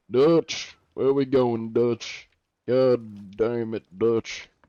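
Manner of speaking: Southern cowboy drawl, throaty, out the side of mouth. Showing someone who asked how to do a Southern voice: Southern accent. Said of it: "It is in Southern".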